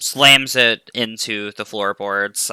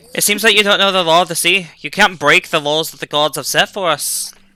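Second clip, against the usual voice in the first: put-on Irish-accented character voice; 8 semitones higher, 3 dB louder than usual. Voicing a character mid-scene, switching to an Irish accent. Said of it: "we're gonna go with Irish".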